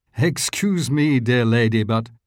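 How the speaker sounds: ordinary delivery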